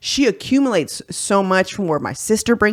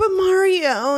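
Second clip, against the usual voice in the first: put-on cartoon girl voice, higher; 11 semitones higher than usual. Retelling a county judge's reply to a news reporter, little Dora voice. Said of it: "her little Dora voice that she has".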